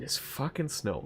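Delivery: muttered very quietly. Retelling brushing snow off the car alone outside, mumbled under breath. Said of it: "I mumble under my breath".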